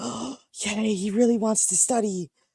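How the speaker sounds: mock gleeful, all-excited exclaim, high and drawn out. Retelling how a character reacts on seeing the kid go to the library: imitating an excited character. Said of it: "he gets all excited".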